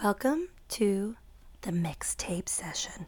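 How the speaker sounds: low, slow, slightly sultry put-on voice. Welcoming listeners to the mixtape session: a little sultry. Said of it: "Do you like that voice? ... I did a little sultry".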